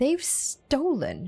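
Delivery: hissed, accusing, high and sharp. Voicing the cleric as she confronts the group, hissing. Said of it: "she hisses".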